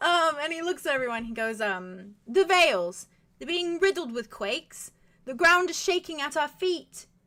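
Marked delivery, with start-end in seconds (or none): 2.3-7.0 put-on high-pitched, loud yelling in a child's voice. A character looks at everyone gathered and addresses them, yelling. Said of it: "And he's he's yelling".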